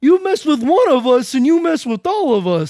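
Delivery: put-on very loud, shrill, high New York accent. Quoting a movie line while discussing authentic accents, New York accent. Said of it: "accents like from New York".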